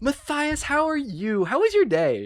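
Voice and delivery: very high, bubbly, excited chatter. A grandmother picks up to talk to her grandson, bubbly and excited grandmother. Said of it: "And she's very bubbly, very excited".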